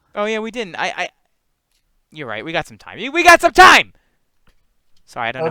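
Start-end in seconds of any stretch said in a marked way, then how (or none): 3.2-4.0 very loud, very high, mad shouting. Telling the others there is still time, yelling. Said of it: "I'm just yelling at Zoom".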